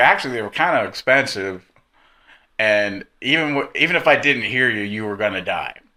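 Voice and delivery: ordinary talk, nothing marked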